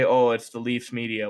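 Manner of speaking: ordinary talk, nothing marked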